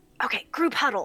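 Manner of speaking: loud theatrical whisper. Player voicing their character as the siblings huddle together, stage whisper. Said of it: "Mirth whispers a stage whisper".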